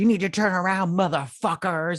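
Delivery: high-pitched, furious, angry ranting outburst. Retelling a film scene, imitating Amanda Waller's angry rant. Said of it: "her last little rant".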